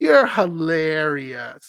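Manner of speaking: sarcastic tone. Retelling a reply to a husband's joke: retelling a sarcastic reply. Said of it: "I reply sarcastically".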